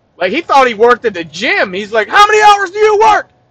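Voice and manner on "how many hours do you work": very high, forceful, loud shouting. Retelling a trainer questioning a gym member: imitating someone yelling. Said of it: "yelled at him so hard he got confused".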